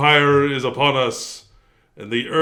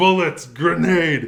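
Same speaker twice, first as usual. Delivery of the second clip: mock drill sergeant, shouting, yelling; 2 semitones higher than usual. Retelling a movie scene where recruits get shouted at: imitating a drill sergeant shouting. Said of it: "just shouted at".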